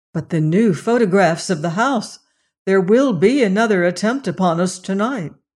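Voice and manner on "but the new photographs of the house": plain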